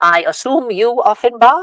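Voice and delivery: tiny piping voice, very high and very loud. Describing arriving near Hogsmeade Village when someone calls out, little voice. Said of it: "you hear a little voice".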